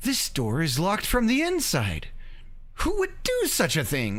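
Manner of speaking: mock utterly disbelieving narrator voice, swooping pitch. Quoting the narrator reacting to a locked door, mock-incredulous narrator voice. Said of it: "it's this most incredulous".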